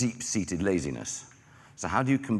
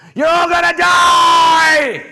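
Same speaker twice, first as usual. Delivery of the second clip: all-out, very high, loud, shrill, drawn-out terrified scream; 18 dB louder than usual. Retelling a speech to an audience: retelling a terrified scream. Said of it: "in terror, I scream at the top of my voice".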